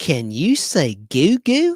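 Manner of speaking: slow, swooping, drawn-out sing-song. Showing a nostalgic picture, the host does a little Mr. Rogers impression. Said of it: "That's my little impression of uh, Mister Rogers".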